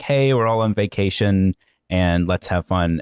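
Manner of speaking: ordinary talk, nothing marked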